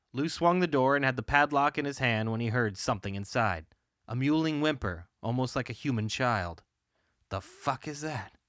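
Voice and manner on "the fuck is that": hushed muttering under the breath. Lou hears something inside the barn and speaks to himself, under his breath. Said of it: "Lou said to himself under his breath".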